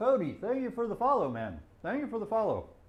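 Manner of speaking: speaking around a mouthful of food. Thanking a follower on stream, talking with mouth full. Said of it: "While I have bacon in my mouth".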